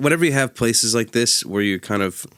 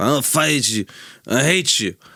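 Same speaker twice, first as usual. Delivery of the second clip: put-on drunken slur, higher; 3 semitones higher than usual. A bartender retells a drunk man at the bar, imitating drunk slurring. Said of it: "He was slurring his words and being like".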